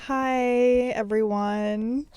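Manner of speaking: sad, downcast, glum. Greeting listeners at the start of a podcast episode, sounding sad. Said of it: "Why do you sound sad?".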